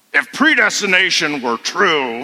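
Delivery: put-on gravelly professor voice. Retelling a professor's question to his class: Doctor Gerstner's gravelly voice. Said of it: "he had a real gravelly voice".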